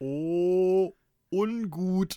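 very loud, high, half-conscious slurred babble. Retelling his helmet hitting a wall, the speaker quotes his past self, retelling a half-conscious slur. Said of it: "halb bewusstlos lallte".

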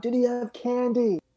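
calling out loudly. Voicing a character calling across the street: shouting. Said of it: "I'm gonna shout".

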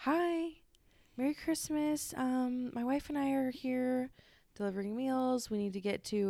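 acted sugary sweet tone. Speaker retells Levi explaining to a woman who answered, imitating Levi's very sweet voice. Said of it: "in like a very sweet voice".

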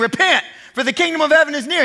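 put-on wild, crazed, screamed preacher-style proclamation. Picturing a crowd as he passes, imitating John the Baptist screaming. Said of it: "and he's screaming".

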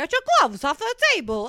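put-on, loud, swooping Hollywood New York accent. Retelling how an actress said a line, like a New Yorker. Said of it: "her fucking accent".

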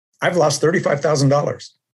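high, loud, alarmed cry blurted out.

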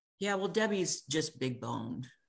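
usual speaking voice

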